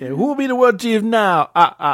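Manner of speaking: hammed-up, over-the-top puppet vampire voice. After each daring the other to do it, you finally give in, in a Count from Sesame Street voice. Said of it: "that's more like count from Sesame Street".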